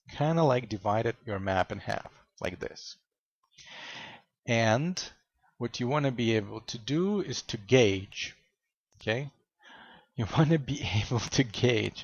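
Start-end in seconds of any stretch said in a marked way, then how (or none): 10.1-12.0 laughing and chuckling through the words. Explaining how to gauge the map on the minimap, laughing while talking. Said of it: "I'm laughing".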